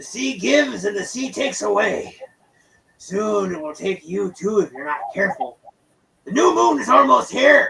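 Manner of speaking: put-on tipsy, drunk old man voice. A game narrator voicing a drunk old man in a tavern, drunk old man voice. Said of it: "clearly inebriated".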